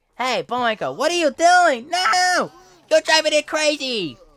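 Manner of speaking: put-on very high, very loud, shrill old-man voice, swooping. Complaining about Rocky's voice in the movie, showing their own: Rocky voice, sounds like old man. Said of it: "I sound like old man".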